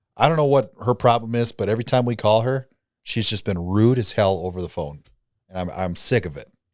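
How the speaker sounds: ordinary delivery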